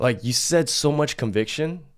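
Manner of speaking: normal talking voice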